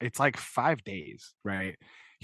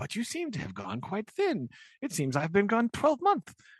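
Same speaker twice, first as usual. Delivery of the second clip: chattering voice swooping high; 9 semitones higher than usual. Retelling a scene from the book, doing Herbert's way of talking. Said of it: "'cause you know how Herbert just talks".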